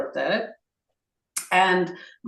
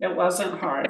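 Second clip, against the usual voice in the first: wasn't stressed with a falling tune.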